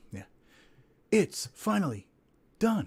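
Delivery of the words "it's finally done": swooping, theatrical narrator voice, pitched up. Doing a requested dramatic reading of a news item: deep dramatic voiceover. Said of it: "We can do a deep dramatic voiceover".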